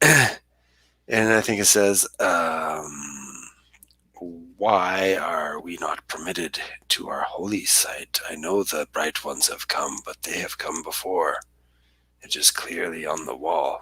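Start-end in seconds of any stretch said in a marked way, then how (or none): 4.6-13.8 low, soft, rasping, gravelly strange-creature voice. Voicing the words of a creature being described, gravelly creature voice. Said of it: "a gravelly type of voice".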